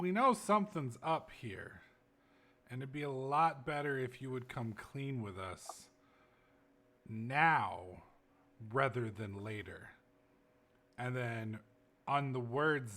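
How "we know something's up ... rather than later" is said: close, confidential half-whisper under the breath. Speaking in character to the boss while being watched: half-whispering. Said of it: "I kinda whisper to him".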